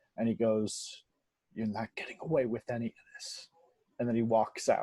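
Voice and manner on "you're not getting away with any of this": quick, hushed, fast menacing whisper. Voicing a character who whispers in a player's ear while walking past; whispering in someone's ear. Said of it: "He whispers in your ear".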